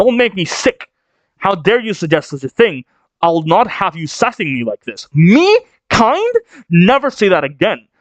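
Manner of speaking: put-on shouting character voice. Retelling a scene where Loki answers Shaggy, acting out Loki's angry shout. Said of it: "Please don't shout".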